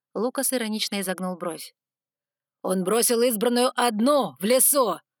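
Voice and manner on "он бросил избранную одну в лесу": sudden, explosive, erupting outburst. The head of the Sargons answers Lucas, exploding in outburst. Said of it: "Взорвался глава саргонов".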